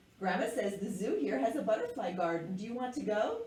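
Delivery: ordinary delivery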